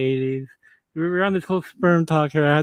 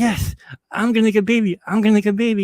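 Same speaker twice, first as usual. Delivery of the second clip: put-on thrilled, eager voice bursting with excitement; 6 semitones higher, 4 dB louder than usual. Telling a joke about racing sperm, voicing Pee Wee in an excited Pee Wee voice. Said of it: "Pee Wee's all excited".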